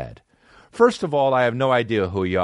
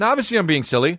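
plain

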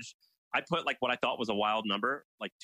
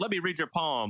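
put-on Jamaican-sounding accent, pitched higher; 4 semitones higher than usual. Retelling how a TV psychic greeted callers: imitating Miss Cleo's Jamaican accent. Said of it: "she had a Jamaican-sounding accent".

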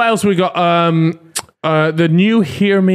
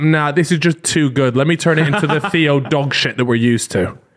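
ordinary talk

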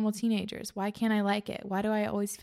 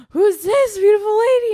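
put-on loopy, drugged-up voice, very high and loud; 12 semitones higher, 14 dB louder than usual. Retelling a video of a man waking from surgery: imitating a high patient. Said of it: "still super high".

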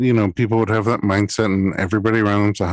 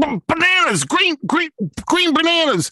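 put-on very high, strained cry. Retelling a woman shouting during a big contraction: imitating a woman straining mid-contraction. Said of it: "she's in the middle of a big, big contraction".

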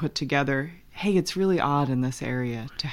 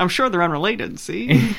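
put-on loud, old-fashioned, old-timey cop voice; 4 semitones higher, 6 dB louder than usual. Joining a co-speaker's joke bit, answering in an old-timey cop voice. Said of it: "that is how cops used to talk".

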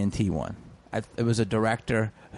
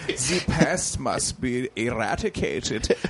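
fake, put-on German accent; 3 semitones higher than usual. Retelling an audition for The Pest, the speaker does a put-on German accent. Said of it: "I had to do a German accent".

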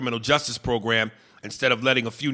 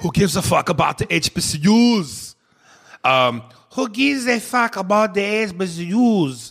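loud, high, horrible fake Slovenian accent; 7 semitones higher, 5 dB louder than usual. After asking for help with the accent, attempting a quote: bad Slovenian accent. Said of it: "please help me with the Slovenian accent. This is going to be a horrible attempt".

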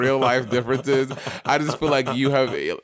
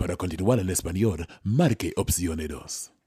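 very deep, low broadcast TV announcer voice; 6 semitones lower, 4 dB quieter than usual. Showing off a favorite tv announcer voice, tv announcer voice. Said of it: "people tell me I have a very good TV announcer voice".

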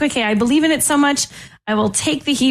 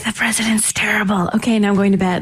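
mock whispering. Imitating someone quietly criticizing the government before bed: imitating a whisper. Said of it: "He whispers it".

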